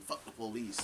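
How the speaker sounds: plain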